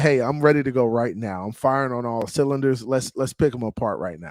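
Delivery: ordinary talk, nothing marked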